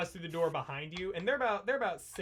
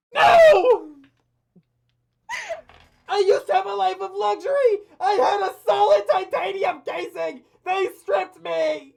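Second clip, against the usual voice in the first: put-on yelling character voice, higher and louder; 17 dB louder than usual. Voicing a character stuck in a bag, Wheatley yelling. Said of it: "Wheatley in the bag just yelling".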